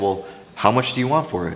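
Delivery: ordinary talk, nothing marked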